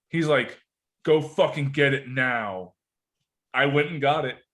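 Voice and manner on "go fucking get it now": slow, grave, dead-serious, no-nonsense delivery. Retelling the backpack's owner demanding it be fetched from the yard, imitating a serious order. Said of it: "the seriousness in his voice".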